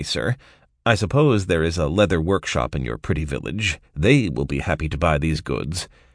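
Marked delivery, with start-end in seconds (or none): none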